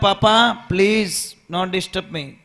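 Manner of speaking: mock rude, dismissive, cheeky kid voice. Retelling a father scolding his son over the car, retelling a child's loud retort. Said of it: "बच्चा जोर से बोलता".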